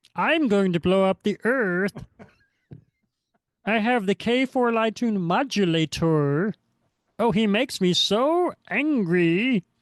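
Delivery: high, little cartoon alien character voice. Talking about loving Marvin the Martian, the speaker does a Marvin the Martian voice. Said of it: "I always loved Marvin the Martian".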